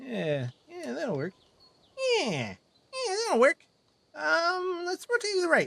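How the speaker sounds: very high, sing-song, bouncy, swooping cartoon voice. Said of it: "this is my Johnny Test voice".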